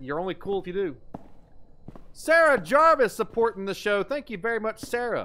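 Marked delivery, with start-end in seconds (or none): 2.1-5.3 put-on British accent, raised voice. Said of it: "You have to read them in British accent?".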